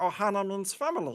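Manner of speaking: raspy alien creature voice. Showing how a voice can be lowered to do Stitch: Stitch voice. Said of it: "then you can do Stitch".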